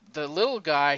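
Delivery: ordinary talk, nothing marked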